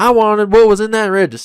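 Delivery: put-on very high American southern accent. Improvising a would-be robber character: southern accent. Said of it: "Why did I pick a southern accent?".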